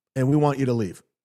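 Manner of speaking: normal talking voice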